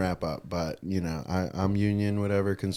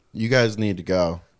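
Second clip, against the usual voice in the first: usual speaking voice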